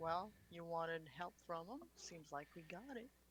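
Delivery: hushed in-character half-whisper. Voicing a character leaning in to another: half-whispering in character. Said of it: "whispering to her".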